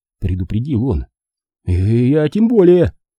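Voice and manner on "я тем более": sarcastic, pitched-up retort. One man answers another man's warning in kind, sarcastic. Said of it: "сказал Монтроз с равной долей сарказма".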